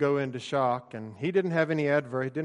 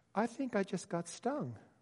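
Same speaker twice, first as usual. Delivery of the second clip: very high, tiny, hushed, barely audible unbroken voice; 7 semitones higher, 10 dB quieter than usual. Retelling what a young man said as bees hit their helmets: very high-pitched voice. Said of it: "he says in a very high-pitched voice".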